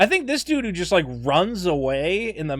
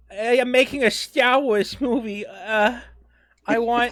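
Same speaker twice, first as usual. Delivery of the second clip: put-on lisping voice, pitched higher; 4 semitones higher than usual. Mocking a film director's way of talking: Rian Johnson impression with lisp. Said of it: "He's got this lisp. He goes".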